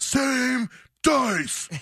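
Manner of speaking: very high, acted-out shriek. Retelling how an angry gambler losing money threw the dice: retelling a scream.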